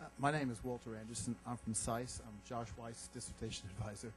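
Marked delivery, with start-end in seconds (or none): 2.3-4.1 soft, barely audible, almost said to oneself. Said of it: "Could you speak up a bit?".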